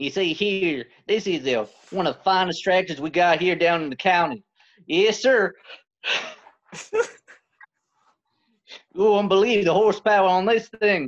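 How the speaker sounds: put-on folksy rural salesman voice, pitched high. Asked to sell a tractor as a redneck, pitching it in a redneck voice. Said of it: "could you sell me a tractor as a redneck?".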